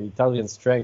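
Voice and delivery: ordinary delivery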